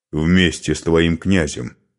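plain reading voice

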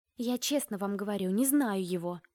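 ordinary delivery

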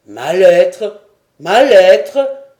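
very loud, drawn-out crying-out exclamation. A character, told he ordered the ship by letter, exclaiming. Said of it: "s'écria Glenarvan".

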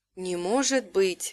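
pure, hushed half-whisper. Liv, staring at a crystal, speaks to the narrator, half-whispered. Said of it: "прошептал он".

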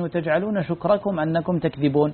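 ordinary talk

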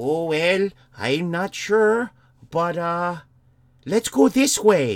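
Scottish-sounding voice, casual. Retelling someone's answer when asked where a missing man was, Scottish-sounding accent. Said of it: "why is he Scottish?".

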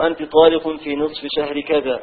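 normal talking voice

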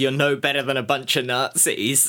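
ordinary talk

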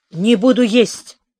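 mumbled, muttered grumbling. Narrating the boy refusing to eat when Tanto asks him to sit, muttered. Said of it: "буркнул я".

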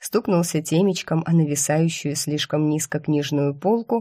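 ordinary delivery, nothing marked

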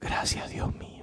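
very faint voice. Barely able to stand, he steps out to the patio, very faint voice. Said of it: "dijo con una voz muy tenue".

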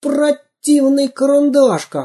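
very high, desperate, despairing cry. Samodelkin finds the pencil behind a bench among ice-cream sticks, shouting desperately. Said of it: "отчаянно закричал Самоделкин".

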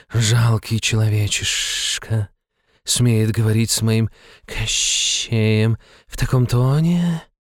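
menacing, hissed through the words. Narrated woman looming over the immortal count, hissing. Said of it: "прошипела она".

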